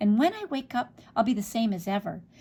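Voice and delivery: ordinary delivery, nothing marked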